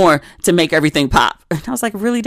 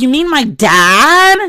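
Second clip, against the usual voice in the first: put-on very slow, loud, bratty, obnoxious teenage voice; 7 semitones higher, 5 dB louder than usual. Retelling a reply to a woman at the table, in an obnoxious teenage voice. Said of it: "I said it in my most obnoxious teenage voice".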